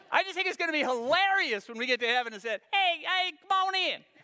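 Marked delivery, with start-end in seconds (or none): 2.7-4.0 high-pitched, welcoming voice with Southern accent. Imagining arriving in heaven and being welcomed in, God in high Southern voice. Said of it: "God's got a high Southern voice".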